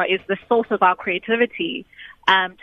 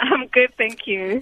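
glad, contented, cheerful voice; 4 semitones higher than usual. A guest on a call answers the host's greeting, happy. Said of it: "You sound like you are happy".

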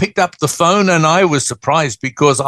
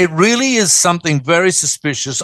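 ordinary talk

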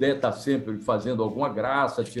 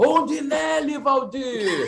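very high, shrill, yelled shout; 13 semitones higher than usual. Retelling a goal, shouting to the radio announcer: imitating own past shout. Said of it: "aí eu gritei".

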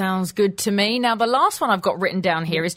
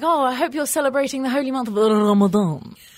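put-on voice, much higher pitch; 6 semitones higher than usual. Acting out how someone with the speaker's own accent talks, in that accent. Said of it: "someone with my accent saying".

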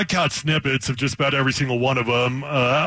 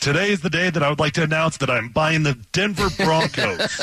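plain

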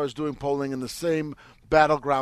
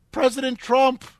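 put-on very high, loud, piping four-year-old voice; 10 semitones higher, 5 dB louder than usual. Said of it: "he says it like a four-year-old".

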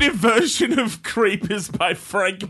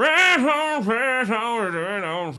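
very slow post-grunge rock voice through clenched teeth. Showing the post-grunge voice: post-grunge voice with clenched teeth. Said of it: "exact same voice, but you keep your teeth clenched".

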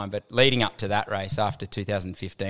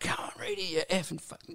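mock abusive jeering, much higher, quieter; 10 semitones higher, 9 dB quieter than usual. Speaker retells how the Australians in the crowd heckled him, imitating abusive heckling. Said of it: "the Aussies were just like giving it to me".

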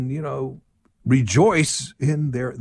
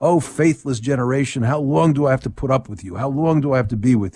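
ordinary talk

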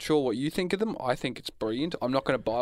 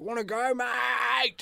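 put-on scream, higher; 10 semitones higher than usual. Retelling how a guy on Swanson Street screamed in someone's face: imitating a stranger screaming. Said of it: "just screamed in my face".

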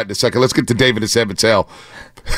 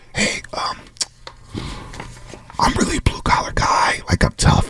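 hushed, secretive, confidential whispered aside. Whispering to the waiter about an egg order: whisper. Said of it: "Let me whisper to the waiter".

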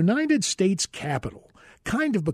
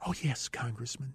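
low, very quiet, soft, sultry voice; 5 semitones lower, 13 dB quieter than usual. Retelling how Miss Newmar answered the speaker's welcome, sultry Miss Newmar impression. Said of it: "with that kind of sultry voice".

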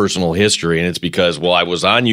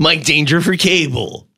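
imitated radio-announcer voice, pitched higher. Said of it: "I'm doing my Mike Danger impression".

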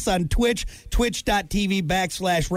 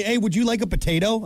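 normal talking voice

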